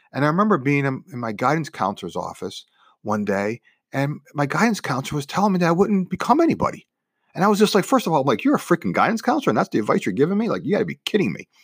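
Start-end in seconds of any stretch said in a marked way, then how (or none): 8.4-11.3 put-on fed-up, indignant, defiant comeback with attitude. Retelling own reply to a guidance counselor, imitating own past attitude. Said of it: "Notice the tone of my voice".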